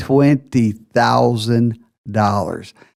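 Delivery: slow, deliberate, word-by-word delivery. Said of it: "I'll say that again slowly".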